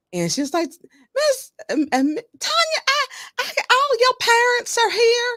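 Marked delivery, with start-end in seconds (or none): 1.1-5.3 put-on high-pitched, crying Southern accent. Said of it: "she had a very deep Southern accent".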